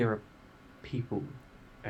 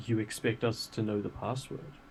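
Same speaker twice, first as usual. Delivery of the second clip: ordinary talk, nothing marked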